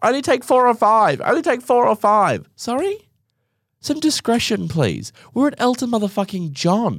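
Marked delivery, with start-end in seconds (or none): 0.0-2.5 loud shouted yell. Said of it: "the husband's yelling at her".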